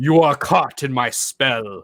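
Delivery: loud, projected, intimidating voice. Bluffing the gnomes in character, projecting the voice intimidatingly. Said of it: "project my voice and be like".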